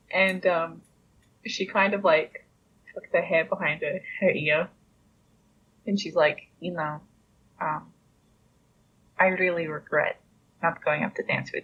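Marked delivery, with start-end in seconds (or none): 6.6-11.6 soft, quiet voice. Confessing in character to a nobleman: speaking softly. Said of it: "you're talking a little bit softly".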